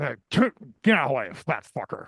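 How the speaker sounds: gruff, grumbled, brushing-off tone. Recalling being in the way as Imus walked out of the studio: imitating Imus's grumble. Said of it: "all I hear is this grumble".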